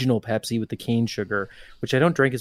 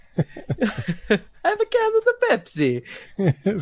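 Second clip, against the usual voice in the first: very slow, very high, swooping, drawn-out sing-song voice; 11 semitones higher than usual. Answering a request to do the Mario voice: Mario voice. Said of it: "Come on, do the Mario".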